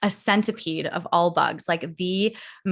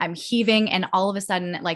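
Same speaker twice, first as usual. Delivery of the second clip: ordinary talk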